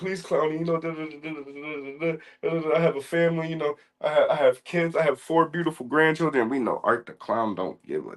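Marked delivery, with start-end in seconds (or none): 0.0-6.5 high, desperate, hard pleading. Retelling a film scene, acting out a strapped-up Santa: imitating Santa pleading. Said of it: "he's just pleading to Art".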